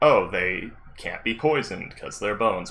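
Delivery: ordinary talk, nothing marked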